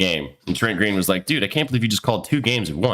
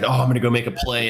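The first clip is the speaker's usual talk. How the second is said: put-on keyed-up, eager excitement. Describing a cornerback who saw the ball in the air, imitating an excited cornerback. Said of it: "he got excited and he was like".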